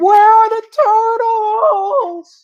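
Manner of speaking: very slow, very high, loud, drawn-out scream. Retelling a TV episode scene where the character panics: imitating Michael screaming. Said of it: "then he starts screaming".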